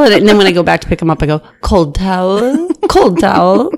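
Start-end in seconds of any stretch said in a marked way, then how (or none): 1.6-3.7 very slow, put-on fake English accent. Retelling how he collects towels from passengers on flights, fake English accent. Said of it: "I do a fake English accent".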